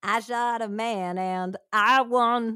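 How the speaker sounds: put-on Texan accent with twang. Voicing an imagined woman from the story, in a texan twang. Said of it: "you automatically have like a Texan twang".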